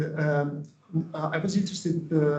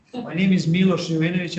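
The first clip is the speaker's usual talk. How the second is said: louder, clearly raised voice. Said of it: "I will try louder".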